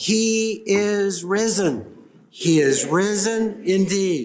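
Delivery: slow, emphatic, said with gusto.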